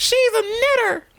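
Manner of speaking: mock accusing cry, very high, loud and slow.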